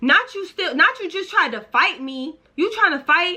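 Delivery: put-on fired-up, worked-up, high, heated ranting. Retelling arguing in the house after drinking: retelling her own screaming. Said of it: "I'm still screaming".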